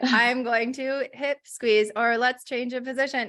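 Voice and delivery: flat, monotone, mechanical robot voice. Explaining steps like rubbing heels, switching into a robot voice. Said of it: "So maybe I'll go into robot voice".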